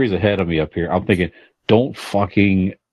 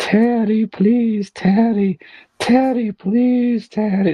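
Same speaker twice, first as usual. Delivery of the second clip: mock very high, drawn-out pleading tone. Retelling how a crying woman begged teddy along the street, imitating someone begging. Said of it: "like begging".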